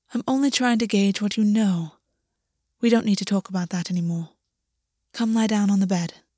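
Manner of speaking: ordinary delivery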